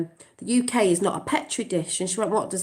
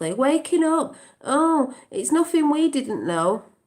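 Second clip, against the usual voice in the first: sarcastic tone, raised pitch; 7 semitones higher than usual. Imitating people shouting about the march: imitating a sarcastic remark.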